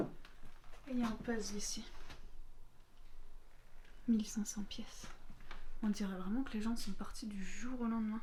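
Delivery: soft, hushed whispering.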